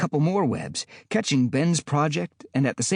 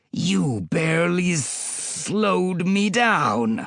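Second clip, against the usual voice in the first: very slow, drawn-out, hissing lizard voice; 3 semitones higher than usual. The lizard, having freed his jaws from the web, taunts the hero, hissing. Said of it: "he hissed".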